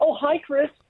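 high, suddenly sweet, polite tone. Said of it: "her tone changed and went".

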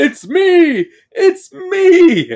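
unhinged, hysterical laughter, very high and very slow. Acting out a movie character in the mirror: imitating Harry laughing hysterically. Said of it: "just laughs hysterically in the mirror".

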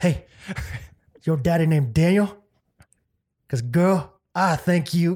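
put-on American Southern accent. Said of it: "I'd go Southern accent".

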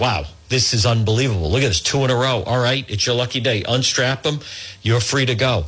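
ordinary talk

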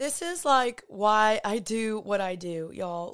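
slow, heartfelt, emotional delivery, voice welling up. Podcast host thanking listeners for sharing and joining every week, getting emotional. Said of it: "I'm like fully getting emotional".

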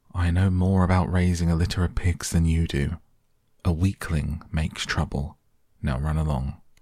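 usual speaking voice

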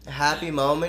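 normal talking voice

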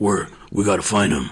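throat-straining put-on growl. Mocking the Batman voice in a movie, doing a Batman growl. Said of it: "You're gonna hurt your throat".

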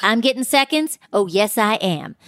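put-on announcer-style announcing voice. Imitating how a cast member always announces she's eating: imitating Erica. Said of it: "She always says".

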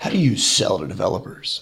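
mock stern with heavy dramatic emphasis. Retelling how the CTO sat them down and asked: imitating Rafi sternly. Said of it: "looks at me very sternly and goes".

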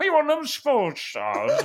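put-on swooping old man voice, about eighty years old. Imagining another speaker's voice at eighty: Josh Rinnigan voice at eighty. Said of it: "Imagine Josh Rinnigan's voice when he's eighty".

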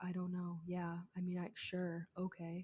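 very quiet, soft, deadpan, flat monotone. Imitating how a woman talked in her police interviews. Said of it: "she talks like this the entire time".

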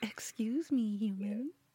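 voice of a pet dog. Voicing the dog pawing at its owner: speaking as the pet dog. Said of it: "does he paw at you like".

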